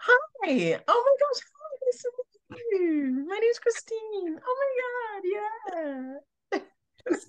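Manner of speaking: very high, put-on, overly nice gushing voice. Describing her old way of meeting people, performing her fake nice-girl act. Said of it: "put on this like fake act where I'd be like".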